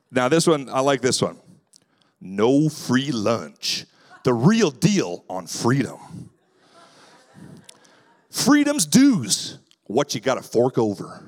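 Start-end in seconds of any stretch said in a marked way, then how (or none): 2.2-11.0 put-on, sing-song American Southern accent. Reading title options aloud, Southern accent. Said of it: "I also have to say these in a Southern accent".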